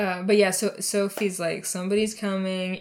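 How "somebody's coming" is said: ordinary talk, nothing marked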